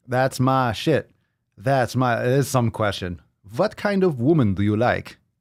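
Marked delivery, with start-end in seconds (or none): 3.5-5.1 put-on, vague Eastern European accent, Russian-like. Repeating a question heard on stream: imitating russian or eastern european accent. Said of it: "Russian or Eastern European accent".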